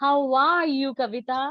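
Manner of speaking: cheerful, glad-sounding. Demonstrating to a conversation partner how emotion colors a question, happy. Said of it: "actually I'm very happy to ask about you".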